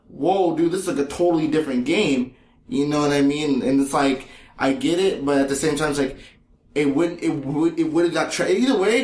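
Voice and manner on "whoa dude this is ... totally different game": ordinary talk, nothing marked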